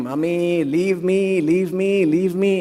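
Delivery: acted child's voice, tearful, crying and slow. Retelling a hospital blood draw, imitating a crying boy. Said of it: "the boy was crying".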